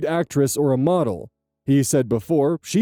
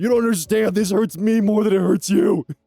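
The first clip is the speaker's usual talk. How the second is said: put-on grumpy dad voice, much higher pitched; 3 semitones higher than usual. Quoting what their dad said when grounding them, imitating a disgruntled father. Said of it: "my dad used to say that to me".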